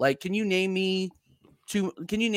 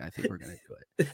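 put-on low mutter, lower pitch and quieter; 12 semitones lower, 9 dB quieter than usual. Retelling a quiet remark made on a stream: retelling saying it under his breath. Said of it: "really low under my voice".

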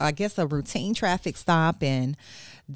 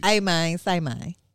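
put-on, attempted Memphis accent. A New Yorker repeats the host's segment phrase after the host, attempted Memphis accent. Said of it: "It's some real Memphis stuff".

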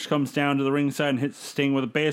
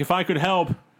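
put-on laughter while talking; 3 semitones higher than usual. Retelling a wrestler laughing while watching an attack: imitating someone laughing while talking. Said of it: "Hoovy's laughing like".

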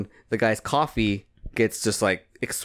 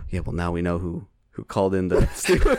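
whispering, lower; 5 semitones lower than usual. Retelling what a man said: imitating someone whispering. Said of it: "he did whisper".

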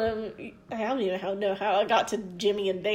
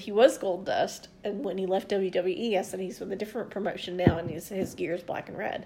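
plain

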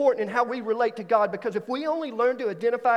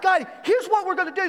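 eager, excited voice with pitched-up lift; 8 semitones higher than usual. Recalling planning a Navy career, acting out past excitement with pitch rising. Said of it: "sometimes I get a little pitch in my voice".

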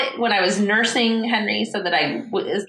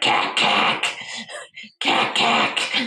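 very deep, slow, drawn-out dinosaur voice; 12 semitones lower than usual. A mother imitates her son saying a duck's sound: toddler's dinosaur voice. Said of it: "he says it in the dinosaur voice".

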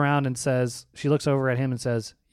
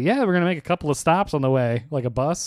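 mocking, dry, sarcastic tone. Retelling a reply to a man on his first flight: retelling a sarcastic reply. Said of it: "I said sarcastically".

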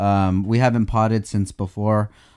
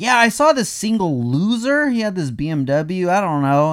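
very high, slow, drawn-out, gossipy drawl; 9 semitones higher than usual. Imitating a stranger who saw someone drive by: imitating a hater. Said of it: "Why are they talking like that?".

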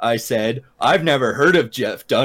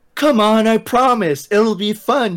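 gentle, coaxing, pitched-up cajoling voice; 9 semitones higher than usual. Jacob tries to talk Bella and the narrator into coming along, coaxing. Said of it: "Jacob coaxed".

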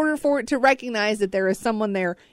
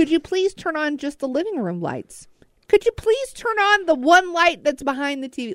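mock overly polite pleading, higher pitch; 6 semitones higher than usual. Retelling pleading with a smart speaker to turn lights on: imitating own overly polite plea. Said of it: "I'm getting more polite as well".

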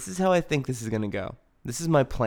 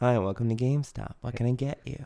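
put-on cute girl voice. Role-playing the GameStop cashier again as a cute girl. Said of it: "the cute girl that you really like".

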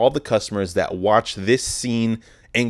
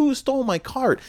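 acted, very high-pitched, angry, pissed-off voice. Retelling a lady at work saying her cart was stolen: imitating an angry woman. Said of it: "she was pissed".

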